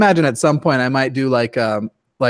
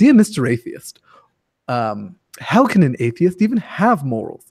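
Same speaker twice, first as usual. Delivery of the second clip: put-on British accent, delivered slower. Showing how he opens his episodes, bad Richard Dawkins impression. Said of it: "It's not a very good impression".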